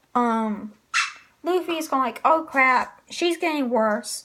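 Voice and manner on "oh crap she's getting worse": normal talking voice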